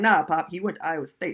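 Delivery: ordinary talk, nothing marked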